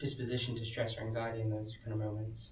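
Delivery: normal talking voice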